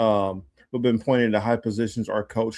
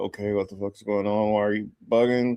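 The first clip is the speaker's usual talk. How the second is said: mock soft, mildly irritated, put-out grumble; 5 dB quieter than usual. Retelling his reaction to being interrupted: imitating someone mildly irritated. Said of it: "he was a little irritated".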